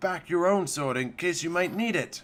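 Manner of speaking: ordinary delivery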